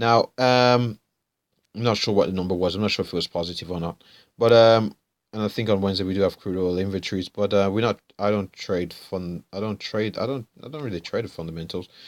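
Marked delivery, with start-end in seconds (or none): 8.2-11.9 soft, mumbled, stumbling, tripping over the words. Explaining your own trading approach to listeners and apologizing for how you're talking, mumbling. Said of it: "sorry about this mumbling".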